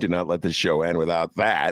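ordinary talk

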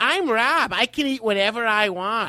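very slow, high, teasing take-off voice. Mocking how the other speaker sounds: imitating the other speaker. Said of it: "here's what you sound like".

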